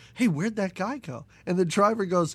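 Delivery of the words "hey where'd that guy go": ordinary delivery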